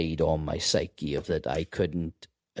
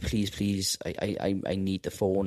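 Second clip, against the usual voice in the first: desperate, begging, stammering, tripping over words; 2 semitones higher than usual. Retelling a prisoner's plea for a phone call: imitating someone begging. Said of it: "he was begging me".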